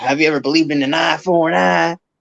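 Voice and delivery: mock badass Western tough-guy cowboy voice. Retelling a man's question, he imitates a badass Western tough guy. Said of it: "he said it in the most badass Western".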